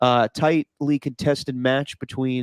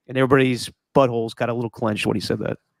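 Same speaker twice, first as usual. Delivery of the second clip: ordinary delivery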